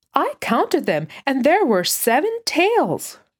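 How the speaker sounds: firm, high, insistent tone. Told he must have counted wrong, a child answers back: insistent. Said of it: "Benji insisted".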